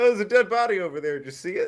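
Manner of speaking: breezy, offhand tone. Retelling a movie line about a dead body: imitating Vincent's casual tone. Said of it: "same inflection as if he just saw the towels were on sale".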